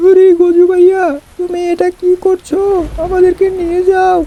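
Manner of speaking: frightened. Calling after Gaju bhaiya, who runs off in the rain: scared. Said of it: "আমার তো খুব ভয় পাচ্ছে".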